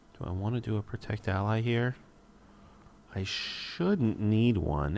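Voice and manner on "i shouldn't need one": strong stress on shouldn't, said slowly. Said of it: "Emphasis on shouldn't".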